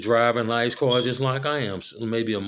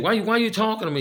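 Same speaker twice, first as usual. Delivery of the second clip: mock very high, nasty, attitude-laden tone; 10 semitones higher than usual. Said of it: "just a fucked up ass attitude".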